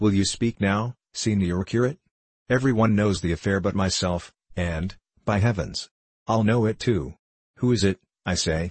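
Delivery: ordinary delivery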